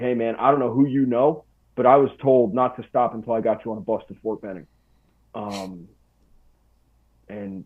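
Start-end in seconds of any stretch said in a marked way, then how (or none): none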